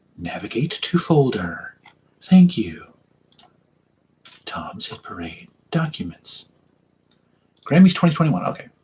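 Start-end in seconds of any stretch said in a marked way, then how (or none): 0.2-6.5 soft, hushed, close ASMR voice. Speaker looking for a file on the computer, in asmr voice. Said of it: "That's my A S M R voice".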